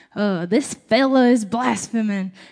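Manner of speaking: slow, put-on Southern drawl with vowels stretched out. Speaker voices the Pharisees from a Bible verse in a southern drawl. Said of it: "it kind of gives it a southern drawl".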